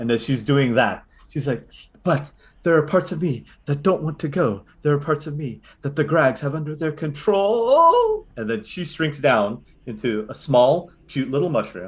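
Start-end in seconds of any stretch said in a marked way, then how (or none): 2.0-8.3 high, swooping woman's voice. Voicing the mushroom mother speaking in the players' heads: female voice in your head. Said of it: "you hear a female voice in your head go".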